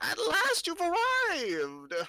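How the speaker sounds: dry, crackly, very high fortune-teller voice. Narrating a scene, the speaker voices a hunched figure at a crystal ball, crackling like dry weeds. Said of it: "her voice crackles like dry weeds".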